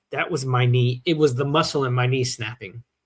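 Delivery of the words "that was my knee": ordinary talk, nothing marked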